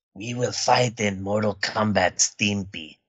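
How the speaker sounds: very low, deep action-hero voice. Joking about a movie character: Christopher Lambert impression. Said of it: "That's my Christopher Lambert impression".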